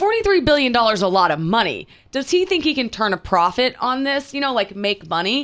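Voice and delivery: ordinary talk, nothing marked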